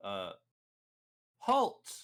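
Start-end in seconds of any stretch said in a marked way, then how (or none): 1.4-2.1 very high, loud, barking shout. Voicing the companion Butter ordering an enemy to stop: Butter shouting a command. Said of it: "I have Butter shout out".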